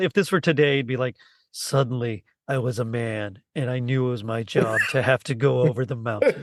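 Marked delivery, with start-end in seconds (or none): 1.5-6.4 deep, slow, grave, drawn-out narrator voiceover. Describing how a story's narration sounds in their head, doing a deep narrator voiceover. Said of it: "just like like a deep deep voiceover".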